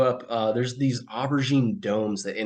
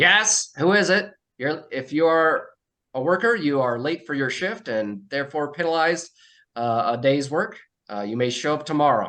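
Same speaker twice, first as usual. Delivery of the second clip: high, tinny, slightly distorted, echoing speaker voice; 5 semitones higher than usual. Narrating a game, the speaker voices motionless figures addressing the players: slightly distorted, tinny voice. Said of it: "slightly distorted, tinny voice emanates".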